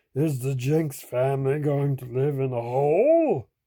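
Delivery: growly big bear voice, "hole" drawn out. A narrator reading a children's story voices the bear looking into the cellar, growling. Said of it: "growled the bear".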